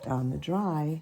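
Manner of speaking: normal talking voice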